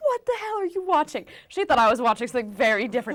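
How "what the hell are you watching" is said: mock shrieking scream, pitched way up. Retelling a mother walking in on a TV show: imitating mother screaming. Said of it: "screams at me".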